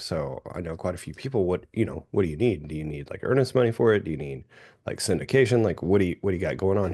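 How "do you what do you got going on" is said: normal talking voice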